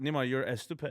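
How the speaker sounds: put-on Persian accent. Showing how your mom would talk to you, imitating mom's Persian accent. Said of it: "Persian people, m- the accent that we have".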